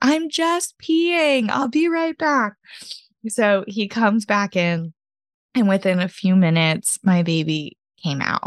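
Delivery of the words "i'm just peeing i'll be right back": very high yell, sounding distant as if another room. Retelling the husband yelling back from the bathroom: imitating someone yelling back. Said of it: "he yelled back to me from the bathroom".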